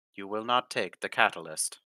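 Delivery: mechanical, level, flat robotic monotone. Voicing the Warforged after a player tries to get its attention, robotic monotone. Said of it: "in its robotic monotone voice".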